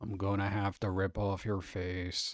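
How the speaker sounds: drab monotone murderer voice. Imagining a character as a murderer, doing a drab monotone Eeyore voice. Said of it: "very drab, monotone murderer".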